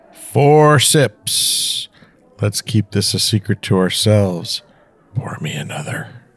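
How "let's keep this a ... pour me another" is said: put-on sultry, seductive tone. A friend points out a man doing his put-on sexy voice. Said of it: "That's him doing his sexy voice".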